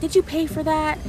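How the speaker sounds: put-on very high, shrill shouted voice. Recalling buying snacks, the speaker imitates a man who yelled at them. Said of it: "just yelled at me".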